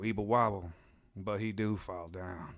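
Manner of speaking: put-on slow, drawling Cajun accent. Retelling what a man says, quoting his line in a cajun accent. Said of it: "in a Cajun accent".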